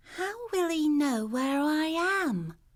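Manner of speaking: small, worried voice. Jamie, on christmas, asks a question in a small, worried voice. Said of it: "in a small, worried voice".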